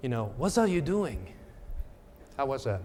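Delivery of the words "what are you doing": rough attempt at a put-on French accent. Retelling what a woman on a flight said to the speaker, in a french accent. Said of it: "in kind of this French accent".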